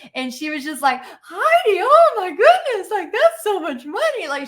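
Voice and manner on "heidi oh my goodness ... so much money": put-on sweet old voice, very high, giggly, swooping excitement. Retelling grandma counting cash on the floor: imitating grandma's giggly excited voice. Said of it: "my grandma just with this giggle".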